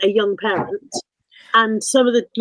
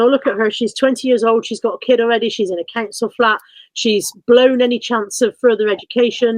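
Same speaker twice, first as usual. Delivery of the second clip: normal talking voice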